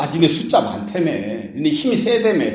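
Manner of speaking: sarcastic, sneering delivery. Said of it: "이렇게 비꼬듯이 말하는 걸 수도 있어요".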